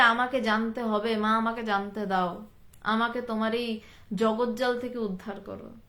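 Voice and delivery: ordinary delivery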